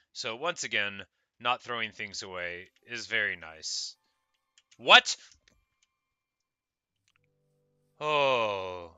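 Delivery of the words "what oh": sudden yelling, much louder. Mid-explanation while playing, the speaker lets out a sudden yell. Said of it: "sorry, I didn't mean to yell".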